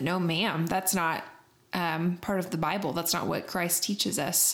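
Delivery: normal talking voice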